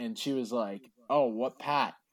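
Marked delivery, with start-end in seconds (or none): 1.1-1.9 put-on, thick, exaggerated Boston accent. Retelling a woman's reply on hearing a man is from boston, exaggerated boston accent. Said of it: "she really started exaggerating the accent too".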